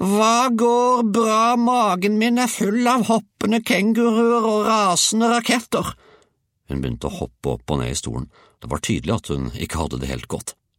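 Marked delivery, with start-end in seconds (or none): 0.0-5.9 very high, wailing, drawn-out howl. Narrator reading the grandmother's reply to Georg, howling. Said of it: "hylte hun".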